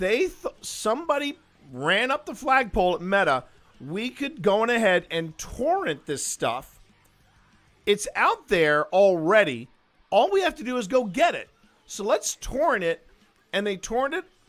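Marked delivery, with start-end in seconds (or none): 0.0-13.1 careful, slow, deliberate step-by-step spelling-out. Repeating what someone at meta proposed, saying it again slower. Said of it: "say that again slower".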